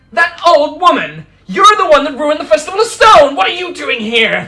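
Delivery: very loud, very high, shrill, swooping furious outraged shout. Narrator voicing a performer who spots the old woman; accusing, outraged shout. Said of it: "Like just starts accusing you".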